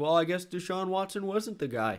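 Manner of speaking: high, silly, mocking voice.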